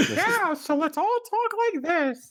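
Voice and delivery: very high, gurgling, gargling squid voice. The group agrees to all talk like squid: gargling squid voice. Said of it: "we all have to talk like squid, so gargle your hot water".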